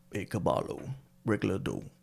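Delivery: soft Spanish-language TV promo announcer voice. Trying to say a phrase in Spanish, Telemundo announcer voice. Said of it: "I think I can say it in my Telemundo voice".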